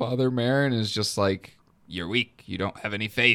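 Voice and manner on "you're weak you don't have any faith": put-on creepy demon voice. Retelling the demon berating Father Marin, in an Exorcist demon voice. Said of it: "like the creepy demon voice".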